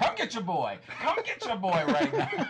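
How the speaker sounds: very high, swooping hollered yell. Retelling how a woman yelled at two people, mock-yelling. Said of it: "And she yells at the two of them".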